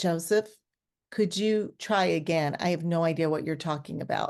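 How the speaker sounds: ordinary talk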